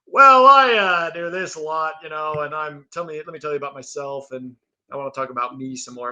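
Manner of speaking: rambling, self-absorbed, bragging sports announcer voice. Mocking a commentator who keeps talking about himself: imitating a self-absorbed commentator. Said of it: "how often do you see a guy on E S P N like".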